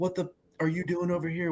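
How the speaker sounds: mock confrontational, in-your-face challenging yell. Retelling how a boat owner jumped over and got in his face: imitating someone yelling. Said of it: "gets in my face and starts yelling at me like".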